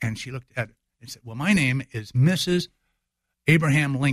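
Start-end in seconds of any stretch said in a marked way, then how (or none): 1.2-4.1 acted haughty, snippy, snappy tone. Retelling Mary Lincoln's reply to an actress who saved her: imitating Mary Lincoln's snitty, snappy reply. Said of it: "real snitty, snappy".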